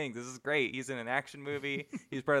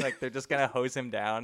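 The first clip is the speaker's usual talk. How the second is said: plain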